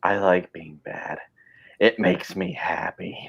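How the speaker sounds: very slow, menacing, whispered villain voice. Quoting a villain line from Spider-Man three: Venom voice. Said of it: "that's like Venom, like, in Spider-Man three".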